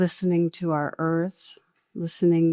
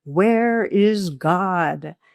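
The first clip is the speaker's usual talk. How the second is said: put-on stern, raised voice, "God" drawn out; 5 dB louder than usual. Retelling a pastor questioning a silent boy, retelling a raised stern question. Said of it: "raised his voice and said even more sternly".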